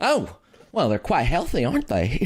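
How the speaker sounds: monster-like put-on voice. Voicing Sally as she blasts creatures away: voicing Sally. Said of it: "And she flaps her wings like".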